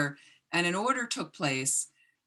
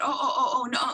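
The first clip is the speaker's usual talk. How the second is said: put-on flustered, caught-out stammer, pitched-up; 7 semitones higher than usual. Retelling the clerk's caught reply: imitating a flustered stuttering clerk. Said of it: "started kind of stuttering herself and said".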